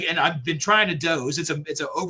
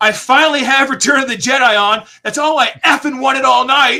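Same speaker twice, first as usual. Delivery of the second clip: very loud, high shouted outburst; 8 semitones higher, 9 dB louder than usual. Telling a story about a calm room suddenly interrupted, imitating someone's yell. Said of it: "And dude yells".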